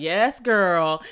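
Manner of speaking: put-on Southern accent. Recalling working in North Carolina and starting to sound country, put-on country Southern accent. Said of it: "how country I was starting to sound".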